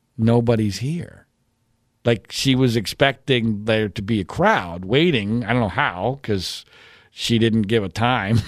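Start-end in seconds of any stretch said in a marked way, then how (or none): 0.2-1.3 very quietly, much lower pitch. Retelling what she said on arriving at the park, very quiet. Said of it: "she very quietly says".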